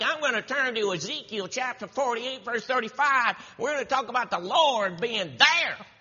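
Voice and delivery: Southern twang with preacher-style pulpit delivery. Retelling how a preacher got up and announced the reading, with a southern twang. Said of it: "he had a southern twang".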